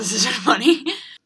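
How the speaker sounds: nervous laughter.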